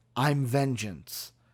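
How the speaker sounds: deep, dropped, low voice. Speaker comparing two actors' Batman voices quotes the new one, deep Batman voice. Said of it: "is it a deeper voice".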